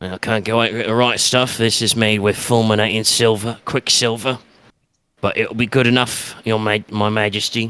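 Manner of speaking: elf character voice, a bit gruff. An elf character addresses his Majesty, slightly rough elf voice. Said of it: "kind of in a in a in a in a again slightly rough voice for an elf".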